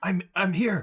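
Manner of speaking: whispering in character. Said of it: "I will quietly whisper".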